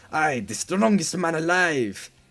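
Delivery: clumsy put-on French accent. Copying how someone voiced Mister Gold: Mister Gold bad French accent. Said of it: "he gave him a French accent. ... He did it like that".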